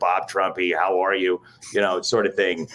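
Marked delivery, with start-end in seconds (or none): 0.0-1.4 put-on straightforward radio announcer voice. Speaker recalls imitating the Sunday night football radio announcer, bad Joel Myers impression. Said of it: "do a bad Joel Myers impression".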